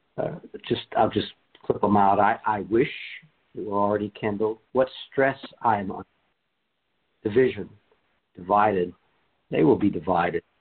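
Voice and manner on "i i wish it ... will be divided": ordinary delivery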